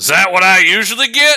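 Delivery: very loud, high, shrill, bewildered shout. After an uncomfortably long pause, a man yells again: imitating a man yelling. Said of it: "before he yells again".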